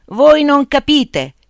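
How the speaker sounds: high, cracking shout breaking apart. A man suddenly feels he must act firmly, shouting, voice breaking. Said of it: "si mise a gridare con una voce che avrebbe voluto sonora e risoluta e invece gli si spezzò".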